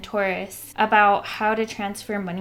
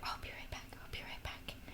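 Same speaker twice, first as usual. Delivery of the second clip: muttered whisper under breath, much quieter, faster. Retelling what a man kept saying after talking to a doctor, whispering under his breath. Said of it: "he's like whispering under his breath".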